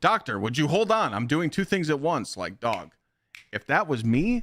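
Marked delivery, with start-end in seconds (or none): 0.0-2.4 raised, pitched-up voice. Retelling a receptionist answering a doctor: imitating someone raising her voice. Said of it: "was raising her voice at the doctor".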